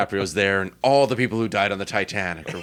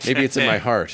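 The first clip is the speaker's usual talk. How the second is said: ordinary talk, nothing marked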